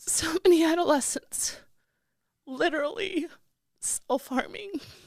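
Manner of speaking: high, tearful, whispered sobbing through the words.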